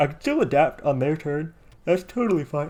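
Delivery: talking through a yawn. Explaining a game turn after a long day at work, yawning. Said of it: "I'm sorry, I'm yawning".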